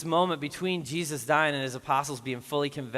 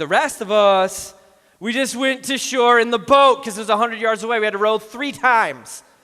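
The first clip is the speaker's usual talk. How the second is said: very loud, sarcastic, mocking, friendly ribbing tone; 8 semitones higher, 11 dB louder than usual. Retelling how John teased Peter for swimming ashore: imitating John, sarcastic. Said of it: "sarcastic and gives him a hard time".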